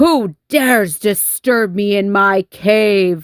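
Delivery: low, growly storybook dragon voice, "cave" stretched out. Reading a story aloud, voice the dragon's line in a growling dragon voice. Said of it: "The dragon growled".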